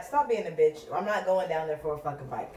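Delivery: ordinary delivery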